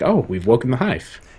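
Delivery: curious, probing, inquisitive delivery. Comparing game voice actors, the speaker mimics a line: Nolan North impression, higher, inquisitive. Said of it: "the higher pitch and the more inquisitive sound".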